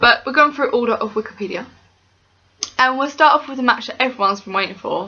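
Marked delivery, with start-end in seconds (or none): 2.8-5.1 dry, sarcastic hype build-up. Introducing the first match of the predictions: sarcastic. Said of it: "Hence my sarcasm".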